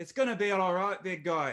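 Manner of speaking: attempted Irish accent. Voicing Bastion comforting a big guy: attempted Irish accent. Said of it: "I'm trying real hard".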